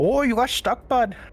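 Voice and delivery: fake Canadian accent, pitched very high. Joking with a teammate who got stuck: put-on Canadian accent. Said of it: "what accent was that?".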